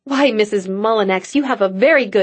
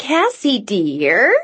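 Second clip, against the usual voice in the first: affected, put-on little bird voice. At the dinner table, Mrs. Mullinex addresses Cassie in a high-pitched bird voice. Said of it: "in the same high-pitched bird voice".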